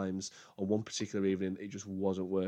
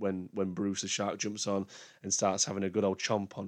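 normal talking voice

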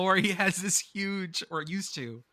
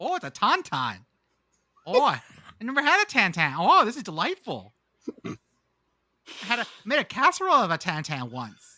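sing-song, swooping Minnesota accent; 3 semitones higher, 4 dB louder than usual. Asked to redo a joke in a minnesota accent, a speaker plays along. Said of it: "Can you do that in a Minnesota accent".

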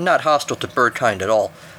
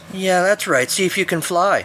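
high, taunting, jeering, mocking squawk; 6 semitones higher than usual. An unexpected voice taunts Spike as he clings to the mountainside: mocking. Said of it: "the squawk mocked".

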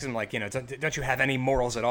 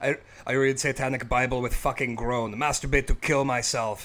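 put-on thick, heavily laid-on German accent. Recalling a metal band's spoken lyric, in a Sodom impression with thick German accent. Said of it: "a thick German accent".

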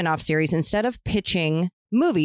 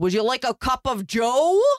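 exaggerated, goofy, pitched-up fake bad American accent; 7 semitones higher than usual. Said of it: "His American accent is really goofy".

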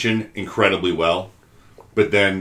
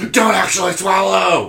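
shrill, very high-pitched scream; 12 semitones higher, 6 dB louder than usual. Retelling a mother screaming at her daughter on set, imitating a mom screaming. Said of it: "her mom just like starts screaming at her like".

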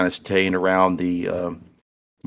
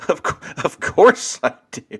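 very high-pitched, laughing through the words; 10 semitones higher than usual. Voicing a character answering a question with a shoulder punch: chuckling while talking. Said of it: "he chuckles".

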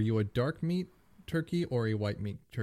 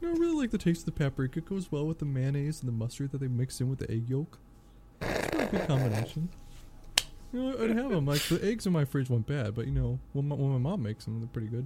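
loose, faintly puppet-like, froggy character voice; 3 semitones higher than usual. Breaking out the once-a-podcast Captain K reference: impression of Captain K. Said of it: "why do you sound vaguely like Kermit the Frog when you do Captain K".

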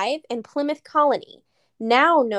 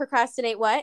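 usual speaking voice

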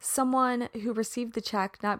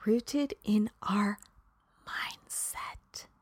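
very slow, soft, word-by-word emphasized delivery; 7 dB quieter than usual. Speaker repeats a key point to the audience one more time, very slow. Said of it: "I'm going to say that very slow".

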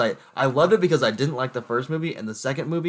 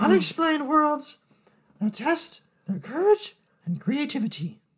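put-on creepy old man voice, pitched higher. Reading a movie plot drawn from the voice hat: Herbert from Family Guy voice. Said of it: "that was Herbert the pervert from Family Guy".

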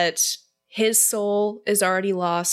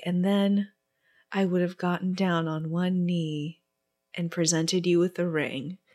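stilted, awkward line reading, quieter; 4 dB quieter than usual. Retelling a scene they found badly delivered, the speaker does a stilted Edward impression. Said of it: "He delivers this in the most stilted".

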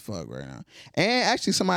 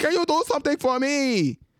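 high, loud, squealing mock kid voice. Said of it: "When he was like".

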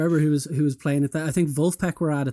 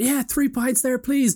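very high, loud shout; 10 semitones higher than usual. Retelling an audience member ordering drinks at a quiet show: imitating someone shouting. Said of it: "just shouting at the back".

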